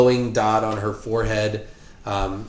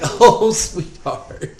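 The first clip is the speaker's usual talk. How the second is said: mock, very high, chuckling old lady voice; 11 semitones higher, 4 dB louder than usual. Describing a woman who remembers your name, imitating her old lady chuckle. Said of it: "She does that kind of old lady chuckle".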